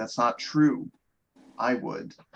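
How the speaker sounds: put-on sad, sorrowful delivery. Retelling a game scene, quoting a character's answer: imitating a sad delivery. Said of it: "Axel sadly says".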